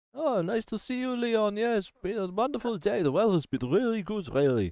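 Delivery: put-on drunk voice, pitched way up, sloppily cheerful. Voicing a character passing the time of day: drunk Tice voice. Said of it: "did you just turn into drunk Tice?".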